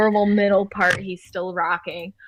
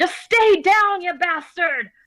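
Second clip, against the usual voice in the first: shrill, very high-pitched screaming; 9 semitones higher than usual. Game narrator voicing a character hit in a fight, screaming curses. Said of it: "cursing, screaming".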